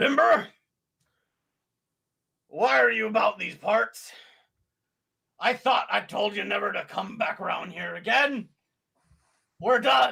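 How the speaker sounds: gruff, creaky, rough-edged speaking voice. A game master voices an unseen figure calling out to a party member, in a gruff voice. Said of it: "you hear this gruff voice speak out".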